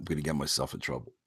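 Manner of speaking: very quiet, hushed, secretive whisper. The speaker says they must whisper or get in trouble: whispering. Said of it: "I got to whisper here".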